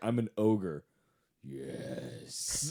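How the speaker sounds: slow, heavy-breathing moan. Retelling an ogre audition for a dating sim: imitating heavy sensual panting. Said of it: "panting, moaning, heavy breathing".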